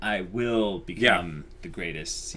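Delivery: ordinary delivery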